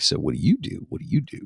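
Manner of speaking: put-on sultry, seductive voice with a rough edge. Recalling the voice he used at clubs years ago, in a put-on sexy, sultry voice. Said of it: "sultry voice back in the days when I would go to the clubs".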